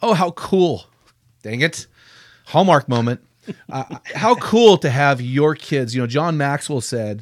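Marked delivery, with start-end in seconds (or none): 0.0-5.5 voice catching, choked up with emotion. Speaker hearing how many men quoted their dads and grandpas, choked up. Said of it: "I'm getting choked up".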